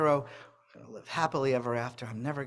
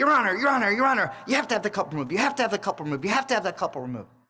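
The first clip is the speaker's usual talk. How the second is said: very high, very loud, shrill screaming; 9 semitones higher, 10 dB louder than usual. A speaker retells a man in a psychotic episode screaming at the top of his lungs. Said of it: "he starts yelling at the top of his lungs".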